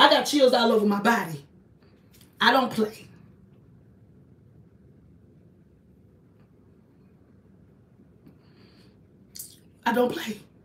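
voice on the verge of tears. Telling listeners about keeping a woman's spirit out of her house, on the verge of tears. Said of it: "And I'm about to cry".

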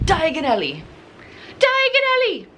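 high swooping voice, name swung up and down. Talking about getting your wands later, say the place name in a Harry Potter voice. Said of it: "Or as Harry Potter would say".

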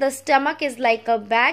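ordinary talk, nothing marked

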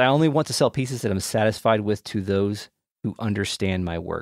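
normal talking voice

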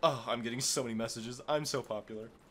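smug, fake-modest, show-off tone. Mocking another player's usual humble brag: mocking a humble brag. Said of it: "than the usual humble brag".

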